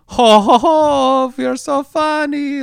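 very high, drawn-out put-on Scandinavian lilt, stretched oh. Mocking actors who don't do accents well: generic Hans and Franz accent. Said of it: "They're just doing this generic like".

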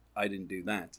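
put-on deadpan delivery. Retelling a film scene where a character answers, imitating a deadpan delivery. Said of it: "it shows how good Kevin Spacey is at deadpan".

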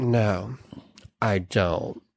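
put-on very dry, low, quiet deadpan. Retelling a woman answering the professor's question, imitating a very dry reply. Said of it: "she goes very dryly".

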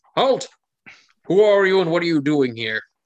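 commanding voice, booming loudly over everyone. Voicing a guard stopping travelers on the road: booming shout. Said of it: "one voice booms out above the rest".

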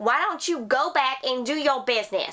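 put-on rural southern hillbilly accent. In conversation, the speaker tells someone to go back: southern hillbilly voice. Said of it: "That's my southern hillbilly".

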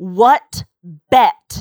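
insistent, demanding. Narrator reads the first-person character's question to the others, demanding. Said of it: "I demanded".

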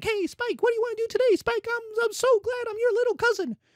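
tiny, squeaky, very high chihuahua voice. Comparing the Persians to a little chihuahua tagging along: little chihuahua voice. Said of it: "the little chihuahua being like".

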